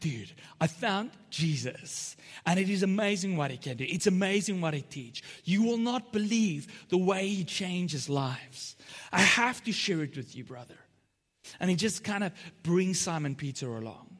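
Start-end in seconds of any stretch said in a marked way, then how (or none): 0.0-10.8 mock, eager, excited gushing, bursting with excitement. Retelling how a man invites his brother to meet Jesus: acting out excited speech. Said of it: "He's so excited".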